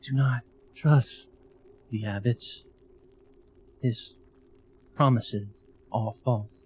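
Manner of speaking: disguised heavenly angelic voice. Casting a message while hiding one's identity: disguised angelic voice. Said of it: "disguise my voice, make it sound super angelic-like".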